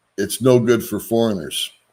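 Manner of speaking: ordinary delivery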